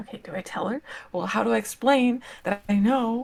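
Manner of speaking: very quiet, hushed whisper. Character pacing at the edge of the firelight, whispering to Chime; very quiet whisper. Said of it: "just very quietly whispering to Chime".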